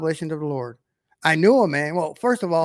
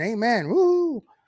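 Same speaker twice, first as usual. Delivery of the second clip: high, sarcastic, fake enthusiastic cheer; 6 semitones higher than usual. Reacting to a video of a woman describing heaven: sarcastic mock cheer. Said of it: "that's sarcastic".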